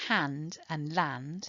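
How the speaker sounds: "hand" and "land" slow with stressed endings. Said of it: "where the final rhyming syllable is stressed".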